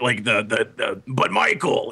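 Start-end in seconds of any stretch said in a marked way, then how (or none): 1.1-1.9 sinister-sounding character voice. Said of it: "that voice is so good".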